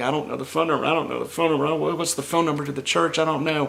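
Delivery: frantic, fast, high-pitched, rattled-off repeating panic. Telling how they had to call the church's youth minister: retelling own panicky state. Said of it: "I'm in a panicky state".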